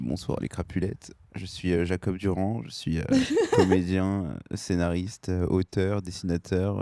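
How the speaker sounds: low, slow radio announcer voice. A guest introducing himself to the host's community, France Inter radio voice. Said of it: "Pourquoi tu prends une voix de France Inter?".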